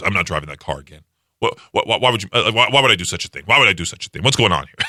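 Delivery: put-on stammering, flustered, embarrassed and defensive. Retelling a dad's reaction after being teased about the car: imitating an embarrassed dad. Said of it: "my dad got all embarrassed".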